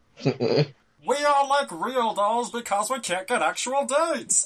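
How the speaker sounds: goofy cartoon alien crustacean creature voice. Joking about Pastafarian heaven: Zoidberg voice. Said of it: "that was the Zoidberg voice".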